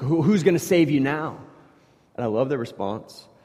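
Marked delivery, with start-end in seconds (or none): 0.0-1.4 put-on mocking, taunting tone. Retelling how a man mocks someone he threatens with the fire, retold mocking taunt. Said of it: "he kind of mocks him".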